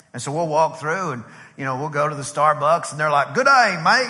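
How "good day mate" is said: loud, pitched-up, fake Australian accent. Retelling a Starbucks visit on a pretend-Australian day: fake Australian accent. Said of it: "we're Australian today".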